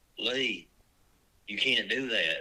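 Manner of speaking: normal talking voice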